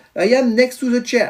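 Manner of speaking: speaking with English accent. Repeating the english phrase for a girl learning it, in an english accent. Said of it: "mon accent anglais, top".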